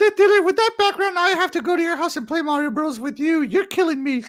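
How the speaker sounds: high, squeaky little cartoon mouse voice. Reading Carmen Johnson's message to Death Dealer aloud on the show, in a Mickey Mouse voice. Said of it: "You sound like Mickey Mouse".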